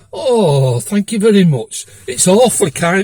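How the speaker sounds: loud, sarcastic, overdone mock politeness. Recounting thanking a woman for a fifty pound fine; retelling sarcastic mock politeness. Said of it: "I've been a bit sarcastic".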